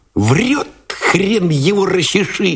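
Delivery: high, jeering, mocking words through giggles. A gunner reacts to a tired soldier's excuse to the lieutenant, with a mocking giggle. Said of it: "захихикал насмешливо".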